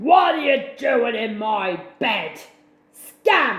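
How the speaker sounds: loud, big growling voice. Reading a story, the narrator voices Poochie finding the cats asleep in the bed, big deep growl. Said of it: "a big, deep, growling voice".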